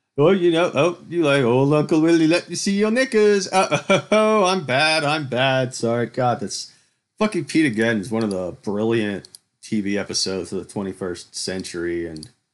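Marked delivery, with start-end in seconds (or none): 0.2-6.1 cheeky, jokey showman voice, high and loud. Retelling a Brass Eye bit, imitating a cheeky joking entertainer. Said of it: "an entertainer who was a pedophile and convicted".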